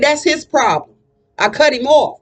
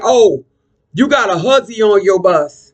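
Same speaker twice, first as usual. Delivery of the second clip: put-on slow, drunken male voice; 5 semitones lower than usual. Retelling what a man at the bus stop said: imitating a drunk man. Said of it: "'cause he was really drunk".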